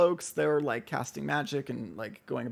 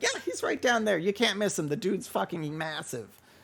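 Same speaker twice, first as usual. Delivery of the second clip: pitched-up, bookish, nerdy scholar voice; 5 semitones higher than usual. Narrating a game, voicing a nerdy scholar who points the way: nerdy scholar character voice. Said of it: "this like nerdy like scholar character".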